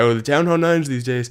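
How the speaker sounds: put-on complaining old-timer, old man voice. Joking about sounding like an old guy complaining: mock old guy voice. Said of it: "I know I sound like an old guy".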